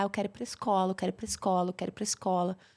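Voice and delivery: acted-out sobbing, repeated begging like a crying child. Retelling how the boy burst into tears wanting school: imitating a crying child. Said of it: "ele desatou a chorar".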